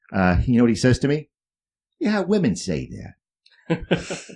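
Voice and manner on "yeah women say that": put-on crazy, high, swooping New England accent. Retelling what an old watch repairman asked: imitating a crazy New England accent. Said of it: "Crazy New England accent".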